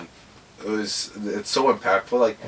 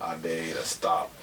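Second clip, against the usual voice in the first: narrator voice dropped low and taken slowly; 5 semitones lower, 9 dB quieter than usual. Imagining an old Morgan Freeman as Captain America: Morgan Freeman voice. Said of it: "like old Morgan Freeman as Captain America".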